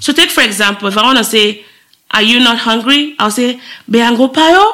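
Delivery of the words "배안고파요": pitch rises at the end of 배안고파요. Showing how a Korean question sounds, rising pitch at the end. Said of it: "See how my voice went up?".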